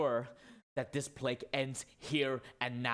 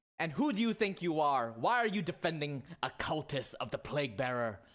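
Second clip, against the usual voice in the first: loud heckling, jeering voice; 3 semitones higher than usual. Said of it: "more mob screaming".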